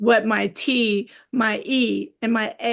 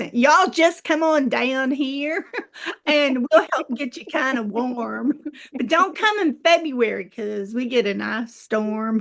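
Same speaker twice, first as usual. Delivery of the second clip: put-on Texas accent, sounding like a native Texan; 2 semitones higher than usual. Inviting listeners, including Mickey, to come visit, in a put-on Texas accent. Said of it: "I'm gonna put on my Texas accent".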